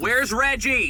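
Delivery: very high-pitched, full, loud scream. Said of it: "hear us screaming".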